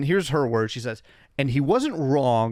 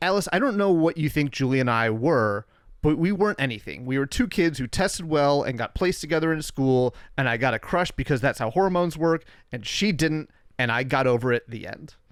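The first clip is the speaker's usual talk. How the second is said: ordinary talk, nothing marked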